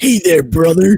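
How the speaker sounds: loud, booming character voice. Trying out impressions with another speaker: Hulk Hogan voice. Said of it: "What about Hulk Hogan?".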